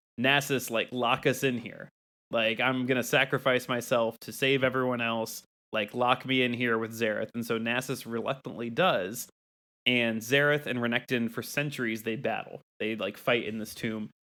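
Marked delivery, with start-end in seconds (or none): none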